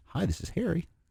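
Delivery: soft, gentle, friendly voice with a smile in it. Demonstrating how introverts answer the phone: soft, friendly, smiling. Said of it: "You can kind of hear a smile".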